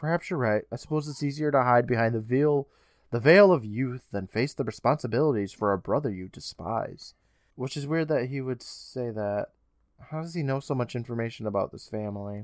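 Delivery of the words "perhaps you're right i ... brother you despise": ordinary talk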